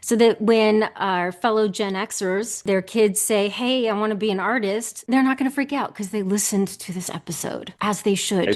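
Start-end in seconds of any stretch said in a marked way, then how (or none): none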